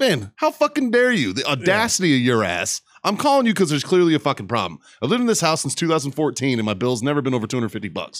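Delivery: furious, angry rant with wide swooping pitch. Recounting going off on a man who blamed the speaker; retelling an angry rant. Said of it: "cause I fucking went off on his bitch".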